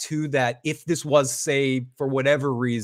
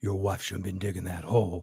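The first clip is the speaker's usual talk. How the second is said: deeper, disguised, put-on tough voice; 6 semitones lower, 8 dB quieter than usual. Retelling a line from a recording: imitating a deeper changed voice. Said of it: "he changed his voice to be like".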